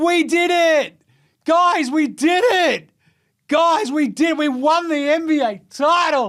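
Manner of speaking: very high, slow, stagey, overacted cheer. Mocking a player's celebration as a year twelve drama class: mocking Jayson Tatum's overacted celebration. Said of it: "prepared, uh, year twelve drama class".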